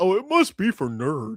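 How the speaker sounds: put-on mocking, teasing delivery. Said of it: "Anything M S K doesn't like".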